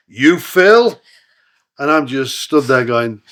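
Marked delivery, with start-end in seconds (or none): 0.2-1.0 put-on big, laid-on Texan accent, loud and high. Retelling being greeted by Lance, Lance's big Texan accent.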